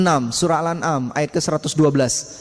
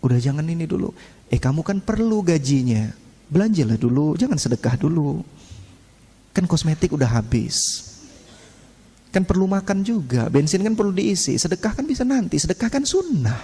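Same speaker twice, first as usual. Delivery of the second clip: put-on devil voice, tempting tone. Preaching on temptation, voicing Satan's whisperings: voicing Satan's whisperings. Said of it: "Setan itu perkataannya indah".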